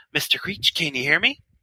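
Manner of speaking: put-on, falsely cheerful, jovial manner. Do an impression of a man calling on the walkie, imitating someone's fake joviality. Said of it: "this fake, jovial, I guess aura".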